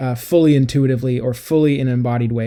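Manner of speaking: ordinary talk, nothing marked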